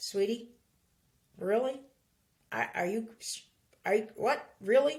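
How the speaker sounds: calm, passive-aggressive tone of disbelief with an edge. Speaker demonstrates how a tone can be in a calm voice, calm voice with a tone. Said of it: "A tone can be in a calm voice".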